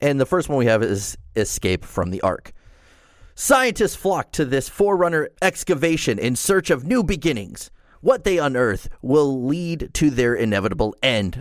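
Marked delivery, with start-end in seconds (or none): 3.4-11.4 big, building arena announcer voice. Reading a Warzone map description aloud, Dragon Ball Z tournament announcer voice. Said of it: "I kind of sound like a Dragon Ball Z tournament announcer there".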